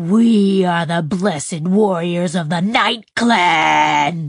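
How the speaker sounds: righteous, havoc-wreaking monster voice. Reading a story aloud, voicing the character in a monster voice. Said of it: "in her best justified and wrecking shit monster voice".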